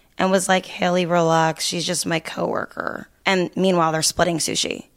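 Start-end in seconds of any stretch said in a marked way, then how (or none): 0.7-3.1 flat, utterly unbothered, zero-emotion nonchalant tone. Retelling his reply after she screamed at him, mock-nonchalant, zero emotion. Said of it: "zero emotion".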